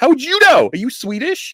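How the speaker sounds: high, loud, mock indignant tone.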